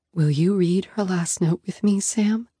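plain

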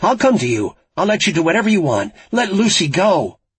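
high loud shout. Frankie yells into the phone at the laughing caller: yelling into the phone. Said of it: "Frankie yelled into the phone".

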